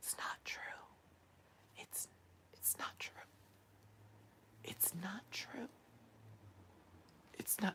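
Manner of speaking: grave, theatrical, low, very hushed whisper. Imitating someone getting dramatic to seem serious: imitating a dramatic lowered whisper. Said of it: "lower his voice all the way down and start whispering".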